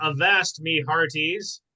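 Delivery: talking like a pirate. Opening a board meeting on Talk Like a Pirate Day: pirate voice. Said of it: "Talk Like a Pirate Day, and we shall be doing exactly that".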